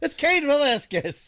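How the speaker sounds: high, slow mock announcer yell.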